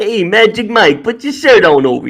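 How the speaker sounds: mocking, sarcastic New York accent, wisecracking tone. Repeating a line after being asked: sarcastic New York way. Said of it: "you gotta say it in the New York way".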